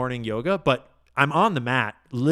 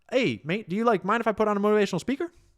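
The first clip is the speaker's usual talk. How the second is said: put-on South African accent, pitched up; 8 semitones higher than usual. Quoting Brian walking in with a request, Brian's South African accent. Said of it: "That's my best South African voice".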